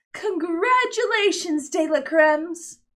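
clear, lofty, haughty tone. Mrs. De La Crème reads the scrolling words aloud, in a clear, haughty voice. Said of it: "read in a clear, haughty voice".

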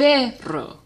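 perro with weight on first syllable pe. Teaching Spanish word stress with the word perro: stressing PE in perro. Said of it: "the emphasis is on the second to last syllable".

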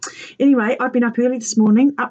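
ordinary delivery

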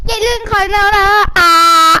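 loud, high-pitched, drawn-out yelling.

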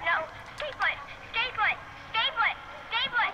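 high-pitched yelling. In a tense scene where others want to leave, screaming. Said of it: "stop screaming!".

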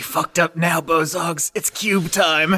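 hushed whispering. Player voicing Wendy as her morning star hits the Bozog: whispering. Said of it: "Wendy just whispers".

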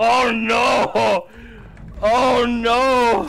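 alarmed shout.

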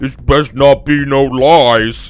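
very loud, booming, dim-witted goblin voice. A storyteller voices a goblin heard from the darkness: loud dim-witted goblin voice. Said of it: "in a loud, dim-witted goblin voice".

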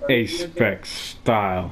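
low, slow, drawn-out delivery. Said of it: "I want you to say it enthusiastically".

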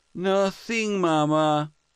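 grudging, reluctant, pitched very high. Narrator reads a son answering his mother's challenge, grudgingly. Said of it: "he grudgingly replied".

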